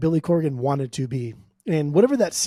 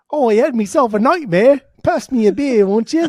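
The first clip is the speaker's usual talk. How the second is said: fake British accent, loud, high, drifting Australian; 7 semitones higher, 8 dB louder than usual. Imitating a beer-drinking man who drinks in his sleep: put-on british accent. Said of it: "It's so fun to do the British accent".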